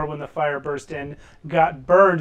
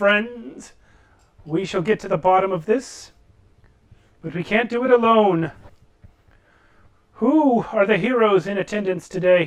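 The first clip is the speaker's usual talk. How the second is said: steady, calm, commanding, authoritative leader's voice; 4 semitones higher than usual. Voicing Greta calming the crowd as a GM: calm, authoritative manner. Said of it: "with her calm, authoritative manner".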